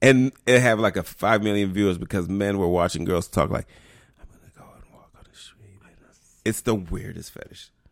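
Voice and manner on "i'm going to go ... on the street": very soft, barely voiced whisper. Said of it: "It's whispering or some shit".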